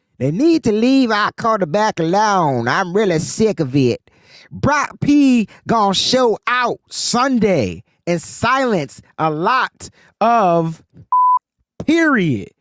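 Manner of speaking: put-on country accent. Imitating a woman who always calls in to the call-in show, country accent. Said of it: "That is my country accent".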